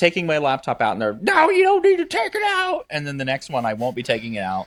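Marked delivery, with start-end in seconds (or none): 1.2-2.8 high, shrill yell, pitched way up. Retelling how security staff at pre-check yell: imitating a security agent yelling. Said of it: "they still yell at me".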